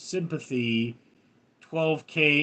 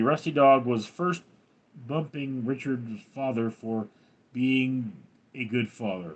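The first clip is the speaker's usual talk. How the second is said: usual speaking voice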